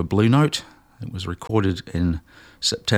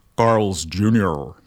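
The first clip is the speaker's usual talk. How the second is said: put-on American accent. Naming the track played, the speaker says it in an American accent. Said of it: "I have to say this in an American accent".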